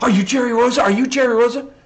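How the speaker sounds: frantic, very high-pitched, excitable blurted voice. Retelling a man running up mid-jam asking for Jerry Rosa, imitating an excitable man. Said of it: "he was so excitable".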